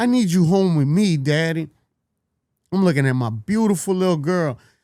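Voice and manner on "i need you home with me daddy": put-on child's pleading voice. Retelling his daughter's words at a visit: imitating his daughter pleading.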